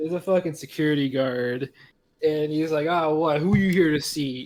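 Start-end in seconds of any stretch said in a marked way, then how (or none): 2.9-4.5 put-on voice acting very tough. Retelling how a security guard questioned visitors: imitating a guard acting super hard. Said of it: "all super hard".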